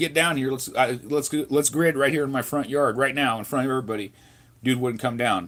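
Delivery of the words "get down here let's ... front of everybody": normal talking voice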